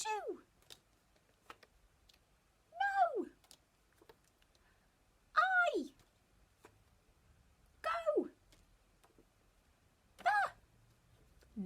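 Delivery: very high, slow, squeaky little caterpillar voice. Leading the class through their tricky words, in a squeaky caterpillar voice. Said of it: "in a squeaky caterpillar voice".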